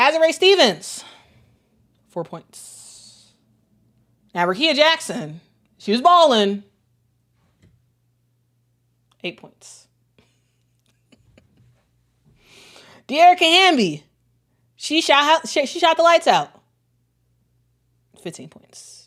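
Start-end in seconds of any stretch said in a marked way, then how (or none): 4.5-19.1 mock-admiring sarcastic praise with swooping pitch. Listing players' low scores after a surprising loss: sarcastic praise. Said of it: "I'm being sarcastic here".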